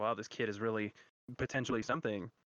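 ordinary talk, nothing marked

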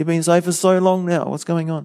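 high, loud frustrated outburst.

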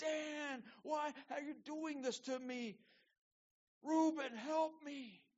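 mock desperate, very high, loud begging cry. A storyteller voices a teenage brother being hauled off into slavery, crying out, begging. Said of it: "And he's crying out".

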